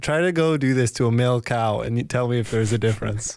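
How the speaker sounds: plain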